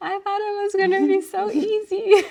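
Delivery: shrill, very high, loud, tearful crying wail. Retelling a call to mom during a hard time: imitating own past crying.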